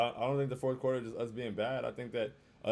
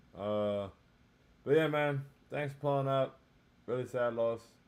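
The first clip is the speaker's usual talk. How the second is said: low-energy, flat, dejected, deflated voice. Thanking viewers for showing up after a sad loss: low energy, dejected. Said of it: "Sorry for the low energy".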